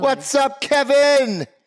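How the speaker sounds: speaker-blowing, high, loud yelling. Greeting someone named kevin: yelling. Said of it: "Stop yelling".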